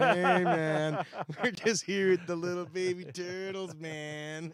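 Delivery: put-on high, drawn-out, wasted-sounding drunk and stoned drawl. Mocking own voice while filming a baby turtle: imitating sounding drunk and high. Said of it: "I sound like I'm super drunk and high already".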